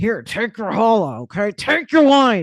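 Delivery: grudging, reluctant tone. Acting out a reluctant partner putting food on your plate, in a mock-begrudging tone. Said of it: "And maybe they're like begrudging".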